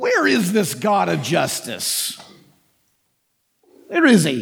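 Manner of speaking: low, dark, cynical, derisive mocking tone. Acting out what frustrated, cynical people say, mock cynical derision. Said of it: "It's a dark cynicism".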